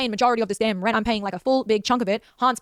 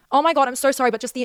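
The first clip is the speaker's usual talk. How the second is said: plain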